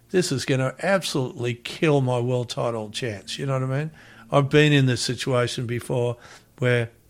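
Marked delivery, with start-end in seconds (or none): none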